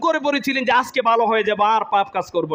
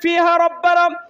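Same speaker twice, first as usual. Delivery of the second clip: desperate, high, loud pleading wail. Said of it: "তারা জোরে চিৎকার দিয়ে বলবেন".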